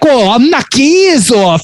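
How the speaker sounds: over-the-top, very high-pitched voice. Imitating a movie character channeling a comedian: over-the-top Sal voice. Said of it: "channeling Dice Clay".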